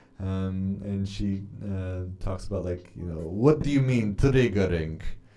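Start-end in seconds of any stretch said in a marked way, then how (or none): 3.2-5.0 clumsy, so-so put-on Russian accent. Quoting a woman who speaks with a Russian accent, in a bad Russian accent. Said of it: "Why do I keep on trying to do this Russian accent?".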